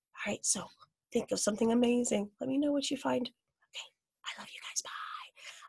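hushed whisper. Saying goodbye to the audience, whispering. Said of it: "I don't know why I'm still whispering".

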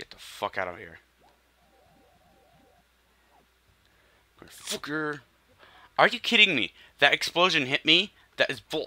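angry rant, rising pitch. Playing a video game and losing lives, angry. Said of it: "I'm just pissed off".

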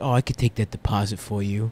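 very quiet, low, hushed mobster murmur. Describing bank workers and imitating how they talk: mobster voice. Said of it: "they talk like they're fucking mobsters".

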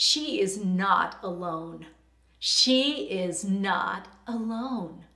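mock firm, dogmatic, very slow delivery. Retelling what the Lord said to them at a woman's bedside, imitating a dogmatic voice. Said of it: "it was in a very dogmatic voice to me".

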